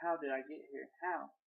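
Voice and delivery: ordinary talk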